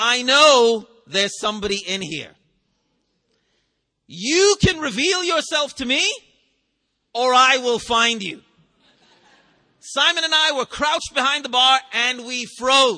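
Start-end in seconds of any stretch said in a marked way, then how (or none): 0.0-8.4 put-on ominous, menacing teacher voice. Speaker retells the English teacher Mr. James entering while they hid, mock-ominous tone. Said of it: "said in an ominous tone".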